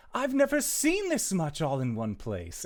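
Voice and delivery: high, loud, swooping delivery. Voicing a creature that repeats another character's words: Myro's voice. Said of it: "and you hear Myro's voice".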